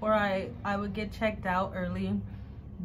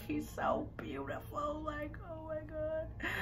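put-on very quiet, teary, drawn-out voice; 7 semitones higher, 11 dB quieter than usual. Recalling a nephew's birth, the speaker gets teary-eyed. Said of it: "I'm getting teary-eyed right now".

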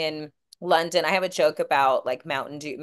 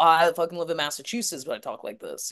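imitated surfer-bro talk. Talking about guys everywhere who talk like surfer bros, doing a surfer bro voice. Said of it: "like a surfer bro".

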